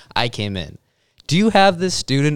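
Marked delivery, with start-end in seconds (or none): 1.3-2.4 loud, high, blurted, barging-in delivery. Retelling walking into a class during a test: imitating asking very loudly. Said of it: "very loudly to the teacher".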